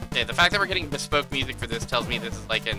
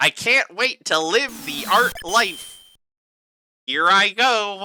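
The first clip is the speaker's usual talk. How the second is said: put-on nasal voice, louder, much higher; 8 semitones higher, 5 dB louder than usual. Having described his voice and not wanting to disrespect his memory, do a nasal, loud David Lynch impression. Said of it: "He's mostly nasally".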